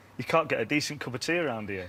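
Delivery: ordinary talk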